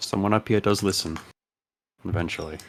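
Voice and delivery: hushed voice, whispering. Voicing a character lowering himself to the sand after the battle: whispering.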